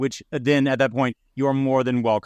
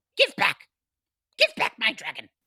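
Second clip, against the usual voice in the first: very high, squeaky, swooping menacing voice; 10 semitones higher than usual. Voicing Meepo pointing a knife at the goblin: demanding in character. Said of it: "he kinda looks him dead in the eye and he says".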